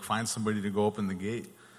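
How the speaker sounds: ordinary talk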